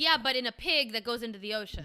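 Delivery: ordinary talk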